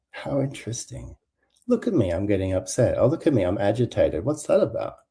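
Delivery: inquisitive, self-observing, curious, wondering musing tone. Showing how to notice getting upset: curious. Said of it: "Just go, like, curiosity".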